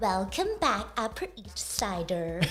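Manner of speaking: put-on valley girl accent. Talking about how people say things differently, show off a Valley Girl accent. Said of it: "Like a Valley Girl accent".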